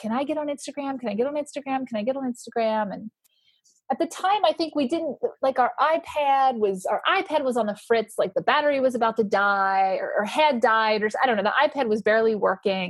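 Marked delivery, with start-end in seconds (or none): 0.0-2.9 soft begging, repeated over and over. Speaker acts out how he had really been begging for weeks: imitating someone begging. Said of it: "he had really just been begging".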